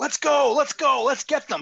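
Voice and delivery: very high, loud, urgent rallying yell. Rallying the dwarves in character while moving up: yelling at the dwarves. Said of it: "I start yelling at the dwarves".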